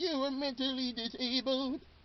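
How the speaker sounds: put-on old grandmother voice. Retelling a TV scene, the speaker voices the grandma: grandma voice. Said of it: "I think it's a good grandma voice".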